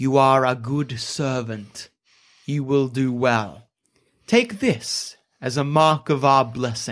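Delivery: gently spoken yet perfectly clear. Game master voices a masked figure addressing the player's character, speaking very softly. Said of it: "he speaks very softly, but you can hear him perfectly".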